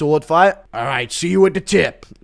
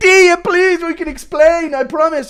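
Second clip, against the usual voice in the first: put-on pleading Irish accent, higher and louder; 13 semitones higher, 5 dB louder than usual. Acting out a requested bit about getting caught: Connor McGregor impression. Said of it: "Impression of Connor getting caught sending pics".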